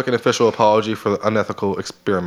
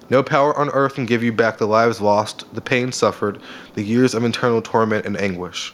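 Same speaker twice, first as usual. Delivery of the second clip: usual speaking voice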